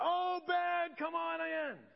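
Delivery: very slow, drawn-out, high calling holler. Imagining a parent calling their kid home from dinner, calling out. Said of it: "It's like you're calling your kid home".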